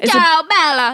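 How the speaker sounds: fake Italian accent, high and loud. Joking about breaking up with someone over the phone: put-on Italian accent. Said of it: "That's an Italian accent".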